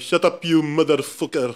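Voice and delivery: put-on South African accent. Speaker acting out a rude line while discussing accents, mock South African accent. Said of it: "Parang sa South African accent".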